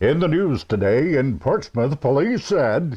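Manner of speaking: radio newscaster voice. Speaker recalls reading the newspaper into the bathroom mirror in a radio newscaster voice. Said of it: "I'd put on what I call my radio voice".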